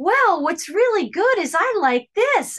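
high, bright-eyed, cheery, chirpy happy voice.

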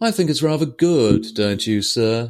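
mock sneering, taunting, falsely polite tone. Retelling a scene line from a TV episode in a mocking tone. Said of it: "he kinda says it with this mocking tone as well".

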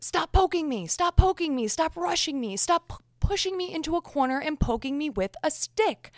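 mock screaming, high-pitched. Pretending to be Amber Heard in an audio clip with Johnny Depp, imitating Amber Heard screaming. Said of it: "she is screaming at Johnny Depp".

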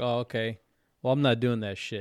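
ordinary talk

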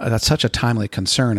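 ordinary talk

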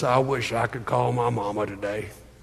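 low, soft, gravelly, rough-edged rumbling voice. On Mother's Day, quoting the old Bell telephone commercial, Bear Bryant gravelly voice. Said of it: "in his gravelly voice".

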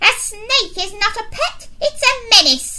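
very high, shrill, loud snapping retort. Miss Bloat, the headmistress, answers a pupil about a pet snake, snapping. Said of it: "snapped Miss Bloat".

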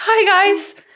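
frightened-sounding voice, very high-pitched. Retelling how the other speaker started the podcast: imitating a scared voice. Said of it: "you sounded scared 'cause you were like".

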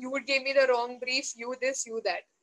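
ordinary talk

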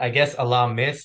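plain

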